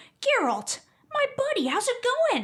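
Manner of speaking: put-on very high, swooping, obnoxiously chummy American accent. Complaining about a game character's voice, imitating him: imitating Dandelion's American voice actor. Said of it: "You get this American who's like".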